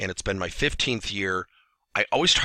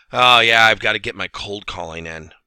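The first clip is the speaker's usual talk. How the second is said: put-on reluctant, grudging tone, much louder; 6 dB louder than usual. Giving a sales example, speaker quotes an inside sales rep, mimicking a reluctant sales rep. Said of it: "say with the following tone".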